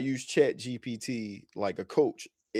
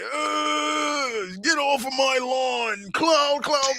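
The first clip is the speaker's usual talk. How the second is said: put-on very high, slow, drawn-out crotchety old man yell; 5 dB louder than usual. Joking about being an old man yelling at a cloud: mock old man yelling at cloud. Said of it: "the old man yelling at the cloud again".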